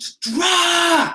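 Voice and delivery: all-out very high scream, "drop" stretched out. Speaker recalls screaming at someone who walked past; retelling a scream. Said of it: "I screamed at the top of my lungs".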